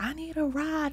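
very high, screaming, pleading. Retelling how a lady with no face came at a woman, imitating someone screaming. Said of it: "coming to her like screaming like".

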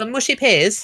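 Manchester accent. Speaker shows off mimicking accents, Manchester accent. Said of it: "what accent is that?".

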